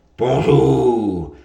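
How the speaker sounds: big, rough, loud, gruff wolf growl. Reading a story aloud, the wolf greets the marmot at the door in his big voice. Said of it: "dit le loup de sa grosse voix".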